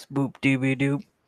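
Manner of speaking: really deep manly voice, soft. Demonstrating a cheer-up trick to the audience: really deep manly voice. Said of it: "Try saying boopy dee doop in a really deep manly voice".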